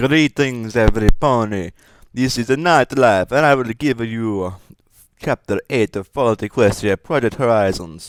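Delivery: Italian and Russian accent. Narrator greets listeners before reading a story chapter, Italian Russian accent. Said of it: "You like my Italian Russian accent?".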